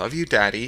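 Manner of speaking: syrupy, honeyed, sugary-sweet voice. Reading a story aloud, a daughter tells her dad: syrupy sweet voice. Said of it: "she said in her most syrupy voice".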